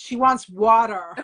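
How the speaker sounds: short put-on American accent. Speaker retelling how two people in america spoke for her, in an american accent. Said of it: "I like that American accent you just did".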